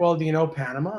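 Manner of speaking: ordinary delivery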